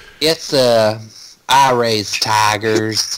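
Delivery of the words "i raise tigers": put-on effeminate Southern rural accent. Imitating Joe Exotic's speaking voice after others describe it: Joe Exotic impression.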